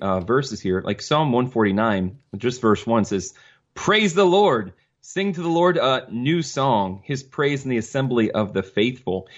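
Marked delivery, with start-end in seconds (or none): none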